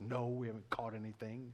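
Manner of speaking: low, grudging, spiteful muttered delivery. Retelling the disciples answering Jesus, in a put-on spiteful tone. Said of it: "You can kind of hear the spite in their voice".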